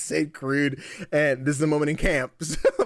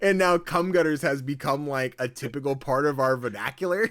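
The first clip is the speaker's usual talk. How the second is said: plain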